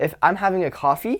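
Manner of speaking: upspeak, pitch climbing on coffee. Explaining how delivery changes how people perceive you, demonstrating a rising questioning uptone. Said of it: "it sounds like I'm questioning myself".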